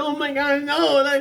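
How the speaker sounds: put-on freaked-out squealing, high, slow, drawn out. Retelling an anime scene where the character Risha panics: imitating Risha freaking out. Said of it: "freaking out".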